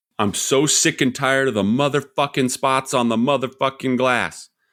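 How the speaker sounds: furious, exasperated, fed-up, sick-of-it tirade. Pitching a new ad where the man yells at the dishwasher, yelling at the dishwasher. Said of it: "how that line could be repurposed".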